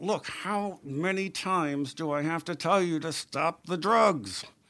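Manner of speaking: furious, fed-up scolding. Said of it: "She was tearing into this".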